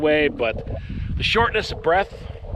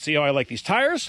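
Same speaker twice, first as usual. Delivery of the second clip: plain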